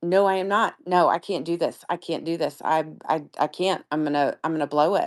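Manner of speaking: acted-out, anxious, panicked voice. Speaker retells being asked if ready to go in, retelling own anxious panic. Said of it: "I am in full on anxiety panic mode".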